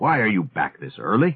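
insistent, demanding tone. Questioning those just returned before they catch their breath, demanding. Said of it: "he demanded".

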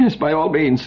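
stuttering. Reading a story, an official grants the captain's request for an alarm: stuttering. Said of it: "stuttered Henrik".

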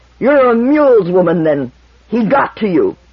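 strangled through clenched teeth. A man with teeth still clenched speaks to a woman, in a choked, unrecognizable voice. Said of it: "Toran choked out in an unrecognizable voice".

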